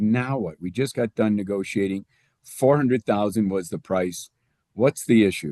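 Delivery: ordinary talk, nothing marked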